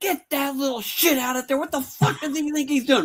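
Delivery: mock enraged, furious, very high-pitched screaming. Retelling a famous director screaming at a child actor: retelling a scream. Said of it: "And he was screaming".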